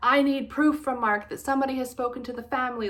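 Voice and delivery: mock high-pitched screaming, losing control. Recounting a phone call, the speaker re-enacts screaming at strangers: retelling a scream. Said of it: "I was just screaming at them like".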